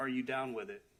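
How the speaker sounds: mock low deep voice. Retelling what a man asked, imitating a deep voice. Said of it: "he used a deep voice".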